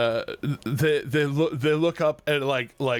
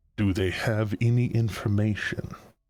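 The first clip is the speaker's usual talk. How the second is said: deep voice, lower in pitch; 4 semitones lower than usual. In a told scene, a voice comes back asking a question, deep voice. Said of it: "you hear this deep voice come back and say".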